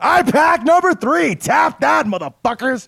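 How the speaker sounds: sudden, loud, very high angry yell. Announcing a pick to the others: sudden loud angry outburst. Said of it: "Why are you so angry about it?".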